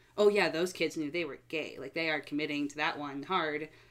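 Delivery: ordinary delivery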